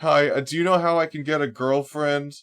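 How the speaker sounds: put-on disaffected young man voice. Retelling a chat message sent while posing as someone: posing as a disaffected young man. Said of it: "I was pretending to be, like, a disaffected young man".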